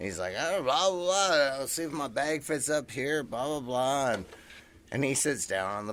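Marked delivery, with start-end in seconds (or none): 0.4-4.1 loud put-on Texan accent, easygoing chatter. Retelling what a man boarding the plane said, imitating a Texan accent. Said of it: "like Texan accent".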